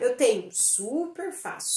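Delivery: whispered, breathy, sarcastic, ironic super fácil. Explaining how intonation shows irony: ironic tone on super fácil. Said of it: "entonação, que mostra que eu tô sendo irônica".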